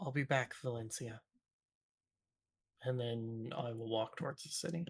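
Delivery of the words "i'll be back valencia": muttered, mumbled under the breath to oneself. Tabletop player in character, about to walk towards the city, muttered under breath. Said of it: "I just mutter under my breath".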